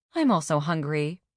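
ordinary delivery

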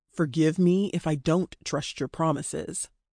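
ordinary delivery

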